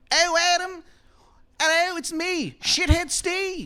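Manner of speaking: put-on very high, worst-ever Maryland accent. Retelling how a guy greets you, in a bad Maryland accent. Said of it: "the worst Maryland accent".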